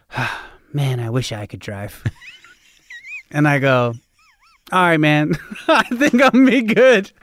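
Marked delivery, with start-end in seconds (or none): 0.1-2.0 mock sigh, lower and quieter. Speaker retelling a man's reply after a car accident, acting out a sigh. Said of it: "And he just sighs".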